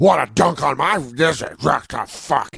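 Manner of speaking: put-on acted drunken speech. Retelling what the mom's boyfriend said to the basketball players: imitating a drunk man. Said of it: "my mom's boyfriend was hammered".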